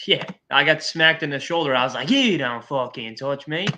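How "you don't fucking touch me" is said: slow, laid-on put-on Irish accent. After getting smacked in the shoulder, retelling his reaction in a put-on McGregor accent. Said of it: "I was putting on the whole accent".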